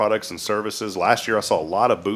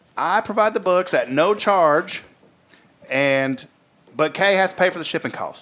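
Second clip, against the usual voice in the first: put-on Southern accent, higher in pitch; 8 semitones higher than usual. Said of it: "I just can't do her accent very well".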